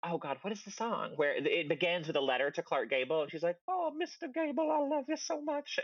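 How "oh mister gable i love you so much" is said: very high, squeaky, slow drawn-out cartoon mouse voice. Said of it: "You sound like a cartoon mouse".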